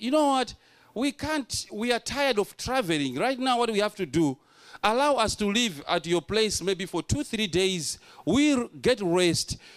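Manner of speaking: ordinary delivery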